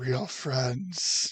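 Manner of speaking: half-muttered, still audible. Playing a man commenting to himself after a goodbye, audible under-the-breath remark. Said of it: "what he feels is like under his breath".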